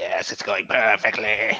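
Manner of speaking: slow villainous half-whisper. Imagining Donzo secretly talking to himself, the speaker acts out: Donzo's half-whispered villain voice. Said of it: "whispering to himself in, in like his villain voice".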